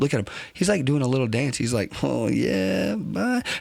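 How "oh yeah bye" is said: giddy, delighted, gleeful voice, pitched up. Watching body cam footage, voicing the happy man on screen: imitating a happy man. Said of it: "He's so happy".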